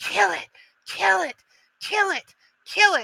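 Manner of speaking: very high, screeching, shrieking skull voice. Game master voicing a skull monster in a tabletop game, shrieking skull voice. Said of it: "the skull shrieks and goes".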